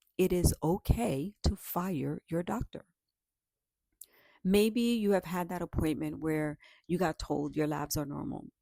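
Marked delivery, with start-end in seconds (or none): 0.2-2.9 measured, slow, deliberate delivery, word by word. Saying a point again to listeners, spoken slowly. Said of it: "Let me say that again, slowly".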